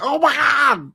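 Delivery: mock frantic screaming, very high panicked shriek. Retelling a phone call where the other person starts screaming: retelling panicked screaming. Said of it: "I hear this screaming going on".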